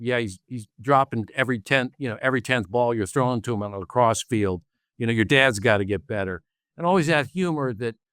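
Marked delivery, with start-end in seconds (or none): none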